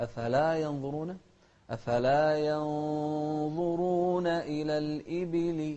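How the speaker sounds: slow, loud, clearly rising tune on afala.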